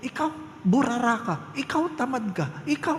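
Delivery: very high-pitched, angry scolding. Speaker acting out how people scold once they are already angry, mock-angry scolding. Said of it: "kung kailan tayo galit na".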